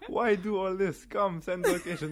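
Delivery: slow, loud, blunt, terse, unbothered, threatening tone. Quoting a fighter's one-word answers: imitating Khabib.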